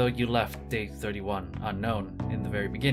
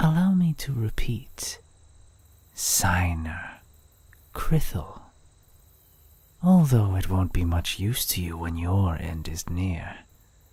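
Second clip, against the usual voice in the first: flirty assassin voice, lower; 3 semitones lower, 4 dB louder than usual. An assassin character speaks; flirty assassin. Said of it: "Flirty Assassin (Day 1)".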